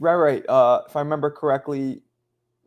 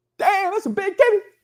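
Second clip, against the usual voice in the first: shrill, screamed, put-on Southern accent. Imitating a guy on a Southern street corner yelling at a passing girl: mock screamed Southern catcall. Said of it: "scream at a girl walking by".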